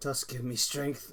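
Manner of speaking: quiet, low mutter under the breath. Playing a character who calls on tusk during combat: muttering under breath. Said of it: "under my breath, I go".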